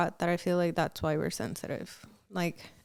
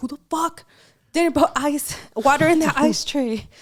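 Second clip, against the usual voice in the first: very loud, high, exploding furious angry yell; 8 semitones higher, 9 dB louder than usual. Retelling exploding over an unfilled ice tray: retelling an angry explosion. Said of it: "for some reason will explode".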